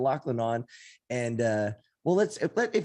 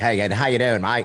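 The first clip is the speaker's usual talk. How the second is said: 1930s gangster voice, much lower pitch; 3 semitones lower, 7 dB louder than usual. Speaker showing co-hosts his attempt at an Australian, bad Australian like James Cagney. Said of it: "it just sounds like a nineteen thirties gangster".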